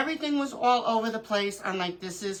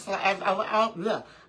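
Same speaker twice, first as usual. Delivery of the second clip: stuttering, stumbling over words. Mid-explanation, the speaker catches themself stuttering. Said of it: "I'm stuttering".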